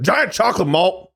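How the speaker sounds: brusque, irritable tone. Retelling how an irritable, impatient customer ordered: imitating an irritable, impatient customer. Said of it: "he would just go".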